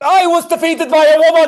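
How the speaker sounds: loud, rushed, forced-sounding blurted delivery. Repeating a forced admission of defeat when told to: louder.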